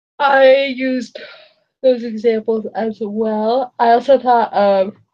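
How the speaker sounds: talking through a yawn. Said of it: "I'm just yawning so much tonight".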